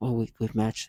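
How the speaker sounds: serious, low, hushed, menacing voice. Mocking how people claim they matched a feeling to you, mock-menacing, serious voice. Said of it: "very menacing and serious voice".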